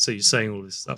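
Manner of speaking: plain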